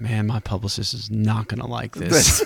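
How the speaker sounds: low muttering voice. Retelling what a guest muttered during a show: imitating John mumbling under his breath. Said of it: "just mumbled kinda lo-, under his breath".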